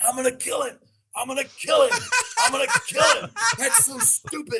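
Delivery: play-acted very high, shrill, climbing, repeated screaming. Retelling a coach being pulled away after a thrown interception: imitating Gus screaming. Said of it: "as he's screaming".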